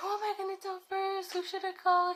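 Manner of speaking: mock frantic, thrilled, rushed shriek, very high. Retelling the reaction to the positive test: imitating someone screaming excitedly. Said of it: "he starts screaming like crazy".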